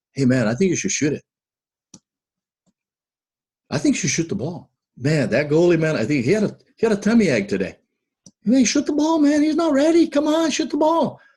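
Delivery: gentle, easygoing, friendly sing-song tone. Recalling how he used to talk to fired-up players, acting out a very nice tone. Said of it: "in a very nice way".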